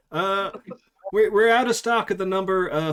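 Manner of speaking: put-on American accent. Retelling a voice from the back room about stock, in put-on American accent. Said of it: "in my best American accent".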